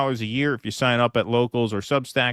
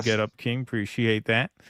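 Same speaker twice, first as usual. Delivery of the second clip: ordinary talk, nothing marked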